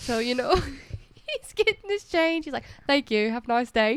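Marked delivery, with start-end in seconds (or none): 2.9-4.0 loud faked British accent, held start to finish. Retelling what he said at the drive-through window, in a British accent. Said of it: "talk in a British accent".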